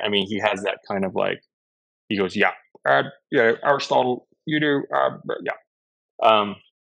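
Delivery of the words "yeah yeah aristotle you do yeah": raised-pitch boss character voice. Retelling a meeting with Lorne, doing a Lorne Michaels impression. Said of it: "that's Lorne today".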